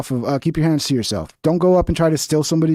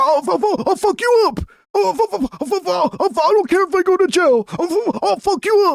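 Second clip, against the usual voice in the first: put-on very high, stammering, toothless rough old man voice; 14 semitones higher than usual. Telling Cam he sounds like a Portland homeless man, imitating toothless old homeless man. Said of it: "He's always like".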